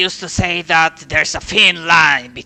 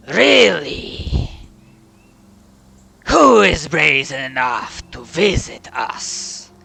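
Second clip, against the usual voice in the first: very deep, rumbling voice. Guests are announced and a voice answers from inside; very deep rumbling voice. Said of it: "you hear this like very deep rambling voice".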